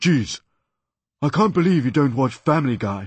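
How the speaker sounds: loud, shouted, put-on English cartoon voice. Retelling an impressionist's complaint: imitating an English voice. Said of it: "He said that in an English voice".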